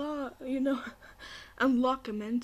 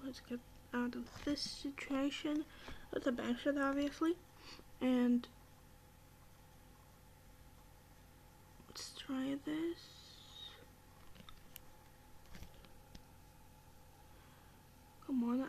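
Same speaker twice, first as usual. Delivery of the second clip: nervous, anxious voice, quieter; 11 dB quieter than usual. A gamer trying a bank shot to get out of a situation, nervous. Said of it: "I'm really nervous right now".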